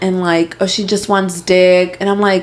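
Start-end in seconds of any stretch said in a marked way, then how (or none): none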